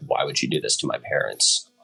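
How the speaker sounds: normal talking voice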